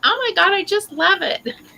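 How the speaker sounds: very high-pitched, gushing TV infomercial voice. Speaker shows how they sounded praising a cigar: mock infomercial voice. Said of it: "you know those infomercials where they're talking about vacuums".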